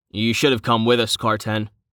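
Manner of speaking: ordinary delivery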